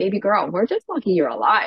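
put-on heavy, thick, sing-song Russian accent, laid on thick. Retelling what her oncologist said at every visit, in a thick Russian accent. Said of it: "her thick Russian accent would say".

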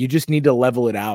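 ordinary talk, nothing marked

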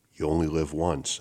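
ordinary talk

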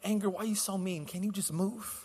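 timid, polite, pleading tone.

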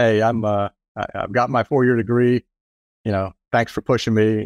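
normal talking voice

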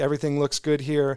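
usual speaking voice

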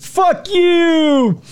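very high, taunting shriek with the end stretched. Recounting a man taunting police officers chasing him, imitating a scream. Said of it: "And then he screamed".

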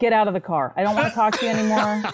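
put-on stern scolding. Retelling how dad reacted to reading in the car: imitating dad scolding. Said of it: "And he goes".

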